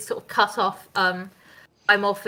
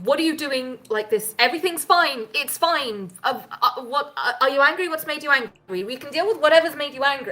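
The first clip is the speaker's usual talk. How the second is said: high, rushed, frantic pleading, words tumbling out; 5 semitones higher than usual. Voicing a panicked character running to calm an angry fog cloud: panicked pleading. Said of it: "hear her panically running towards".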